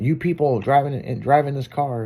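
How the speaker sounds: ordinary talk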